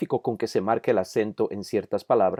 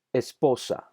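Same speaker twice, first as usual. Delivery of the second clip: esposa with middle syllable stressed. Spanish lesson on word stress, stress on middle syllable of esposa. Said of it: "El acento está en la sílaba de en medio".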